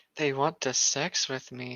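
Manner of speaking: very sexy voice. Reading a fan story aloud, a character's line: very sexy voice. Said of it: "she said in a very sexy voice".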